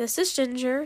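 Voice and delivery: ordinary talk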